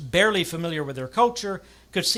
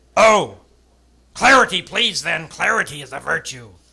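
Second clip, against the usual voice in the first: curt, very loud, snapping voice; 10 dB louder than usual. A narrator reading the leader's reply to the controller, snapping. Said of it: "he ordered the controller, / our leader snapped".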